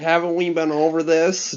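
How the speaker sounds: extremely loud, squealy, high, annoying voice. Retelling an aunt's reply at a family meal: imitating a super loud voice. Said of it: "super loud".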